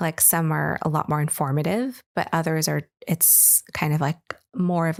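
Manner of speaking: ordinary talk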